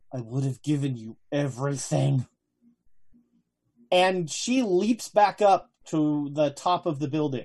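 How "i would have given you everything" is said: muttered, much lower and quieter. The game's narrator voices a character to a player, Madam Lin muttering under breath. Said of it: "mutter under her breath".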